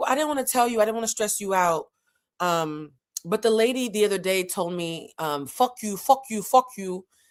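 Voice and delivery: put-on thick, heavily laid-on French accent. Speaker imitating their mother's side of a conversation: thick French accent. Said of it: "Very thick French accent".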